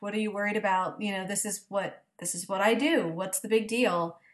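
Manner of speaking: put-on emotionless, matter-of-fact voice. Retelling a scene where Buffy smothers Dawn: imitating Buffy's emotionless matter-of-fact voice. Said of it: "just very matter of fact".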